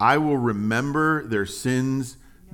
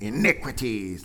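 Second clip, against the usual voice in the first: word spat with venom, witchy and venomous. Going through a verse aloud, the word 'iniquities' said with venomous, witchy spite. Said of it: "You have to say it with a little venom, right? ... Like you're a witch or something".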